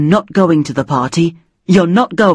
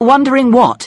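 wary, suspicious, probing, pitched-up delivery; 6 semitones higher than usual. Mum answering her child's hesitant question about Saturday, asking suspiciously. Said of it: "She asked suspiciously".

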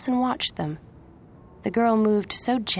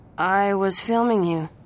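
ordinary delivery

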